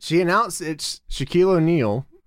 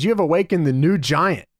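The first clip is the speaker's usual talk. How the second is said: ordinary delivery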